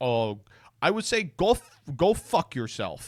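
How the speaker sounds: put-on strange blended South African accent. Quoting a man's interview answer about advertisers leaving, in his weird mixed accent. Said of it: "in his like weird, you know, American, Australian, South African accent".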